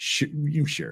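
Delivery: soft, smug, dismissive brush-off. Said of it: "Just being very dismissive and smug".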